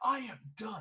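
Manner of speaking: angry shouting. Confronting a man in a game scene: shouting in character. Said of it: "I start shouting out".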